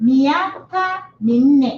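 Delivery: miaka minne drawn out slowly and carefully. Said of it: "slow model for repetition".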